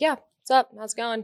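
put-on breezy casual tone. Retelling how people working in elevators greet newcomers: imitating a nonchalant greeting. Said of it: "they're just acting so nonchalant, being like".

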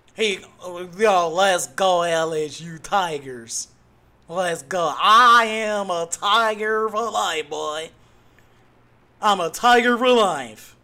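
put-on loud, phony, laid-on Southern accent. Reacting to what Brian Kelly did, the speaker is mocking Brian Kelly's fake Southern accent. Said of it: "Get your Southern accent together".

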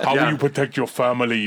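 put-on Austrian accent. Imitating the guest giving talks like Arnold: Arnold Schwarzenegger impression. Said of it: "like Arnold talking about girly man".

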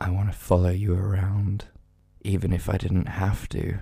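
low, seductive, sultry, very sexy voice. Saying a line to Simone to show how creepy it would sound: very sexy voice. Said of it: "you're doing a very sexy voice".

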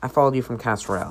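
plain

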